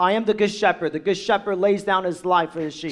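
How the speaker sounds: ordinary talk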